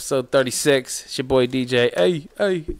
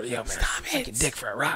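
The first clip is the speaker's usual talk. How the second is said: fake whispering, a bit quieter; 2 semitones lower, 10 dB quieter than usual. Joking about acting up at a high school reunion: pretend whisper. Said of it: "I'm gonna whisper".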